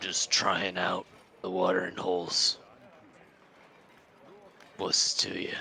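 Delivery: harsh, roughed-up, very rough growling voice. Narrator voicing a figure in shadow who answers, in a very rough voice. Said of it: "they say in a very rough voice".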